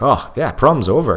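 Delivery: put-on Canadian accent. Joking that Canadians stopped caring about politics, imitating them in a put-on Canadian accent. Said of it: "Canadian accent, that's great".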